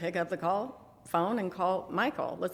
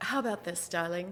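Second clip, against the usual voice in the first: put-on, theatrical woman's voice; 4 dB quieter than usual. Retelling a phone call with an original Actors Studio member, imitating a woman's theatrical voice. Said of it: "she has this wonderful theatrical voice".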